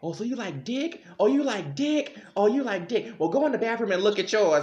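high-pitched yelling voice. Retelling a dad catching his child out: imitating dad yelling. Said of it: "my daddy's just yelling at me".

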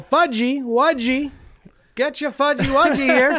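put-on old-time announcer, very high, slow hawking call. Imitating a vendor walking down the beach: Fudgy Wudgy Man's 1920s announcer voice. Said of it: "that old nineteen twenties, like, announcer voice".

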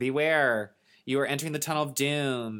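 put-on female PA voice like a recorded announcement. Describing a recorded warning in a tunnel of doom, imitating a woman's PA voice. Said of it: "It's like a woman's voice".

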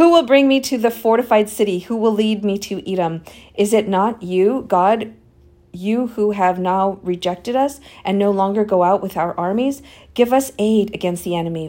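ordinary talk, nothing marked

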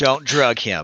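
stern, severe voice. Speaking in character to a party member, warning him: stern. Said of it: "I look at him very sternly".

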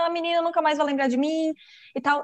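high, tearful, words blubbered out mid-sob. Retelling a scene where a little elephant sits crying, mock-crying. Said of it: "chorando falando".

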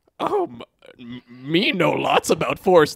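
very slow, drawn out, stumbling, swooping wandering pitch. Pitching a sketch where Yoda answers a student: Yoda voice. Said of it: "That's how Yoda talks".

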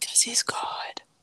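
breathy whisper pressed right against the mic. Answering a question about Jesus being the way: whispering close to the mic. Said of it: "To whisper".

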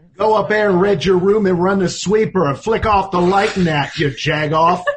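put-on mad, all-in, heavy Pittsburgh accent. Game show contestant turning a phrase into a Pittsburgh saying: Pittsburgh accent. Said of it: "you have to say in your best Pittsburghese".

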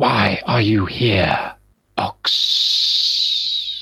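strange, hissing creature voice. A creature with its spear pointed forward questions ox, in a hissing voice. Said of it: "makes this strange kind of hissing noise and says".

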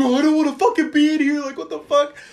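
very high, frantic, panicked screaming. Retelling how a friend stuck in a car's back seat freaked out; retelling a scream.

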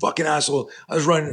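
mock livid ranting yell, very high-pitched. Retelling how an upset friend jumped up and started yelling; mock-angry yelling. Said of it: "he starts yelling like".

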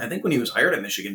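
ordinary delivery

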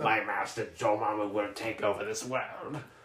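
deep, low, sinister evil villain voice. Speaker recalls a childhood cartoon villain, doing Tony Jay's evil villain voice. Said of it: "that old evil voice actor".

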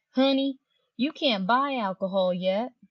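slow, sugary, sweet put-on Southern drawl. Retelling what a cashier said at the checkout: imitating a sweet Southern accent. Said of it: "She had this sweet Southern accent".

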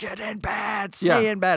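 play-acted very slow, spaced-out, drawn-out screaming. Retelling how a parent screams at kids to stay in bed: imitating a parent screaming. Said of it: "you're just screaming at them".

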